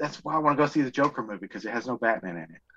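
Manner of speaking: dry sarcastic tone, meaning the opposite. Joking about a movie, then admitting it was sarcasm: sarcastic. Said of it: "I'm being sarcastic".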